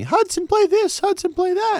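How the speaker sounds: very high, teasing, mocking put-on voice. Radio host recalls people in the studio telling him what to play, in a mocking voice. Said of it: "that's not me doing a voice to make fun of".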